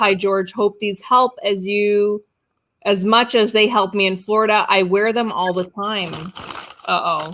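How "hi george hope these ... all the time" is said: normal talking voice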